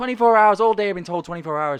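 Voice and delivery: mock angry ranting. Retelling a caller who is angry about waiting: imitating an angry caller. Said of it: "he goes mental".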